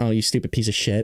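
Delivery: put-on condescending tone. Mocking how a condescending woman talks: imitating someone talking down. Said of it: "They talk down to you".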